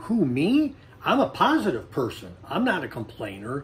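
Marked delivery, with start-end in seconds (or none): none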